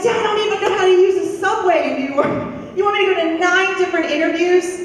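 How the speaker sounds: high, fast, panicked, rushed speech.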